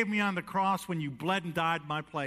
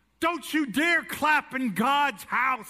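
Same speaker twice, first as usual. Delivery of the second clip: put-on loud, drawn-out yell, pitched up; 8 semitones higher, 5 dB louder than usual. Retelling how one of the synagogue rulers yelled at the kids: imitating someone yelling. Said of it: "stood up and yelled at the kids".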